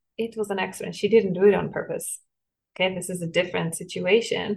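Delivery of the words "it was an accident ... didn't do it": usual speaking voice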